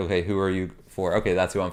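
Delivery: ordinary talk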